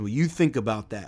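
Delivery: deep voice dropped way down low. Imitating a ministry founder's catchphrase: Steve Brown deep voice. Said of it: "who's got that real deep voice, and he says".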